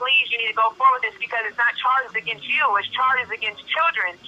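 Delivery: ordinary talk, nothing marked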